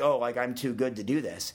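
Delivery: ordinary delivery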